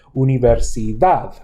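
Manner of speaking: Universidad, stress landing on last syllable dad. Lesson on word stress, Universidad: stress on the last syllable dad. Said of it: "You can hear the stress falling on dav".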